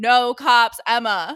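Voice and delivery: booming, commanding, heavenly voice of God. Reading out a message painted on a wall: voice of God. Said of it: "You sounded like the voice of God".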